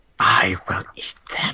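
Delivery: hissy, echoing, echoey whispered voice. Game narrator voicing a hidden voice speaking to a player, echoey and hissy. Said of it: "this echoey, hissy uh, voice".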